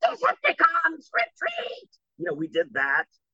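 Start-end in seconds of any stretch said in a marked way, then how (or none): 0.0-1.9 very high character voice, swooping wildly. Recalling an audition as Chris Latta's Starscream: Chris Latta's Starscream voice. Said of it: "I auditioned as Chris Latta, Starscream".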